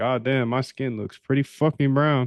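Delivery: ordinary talk, nothing marked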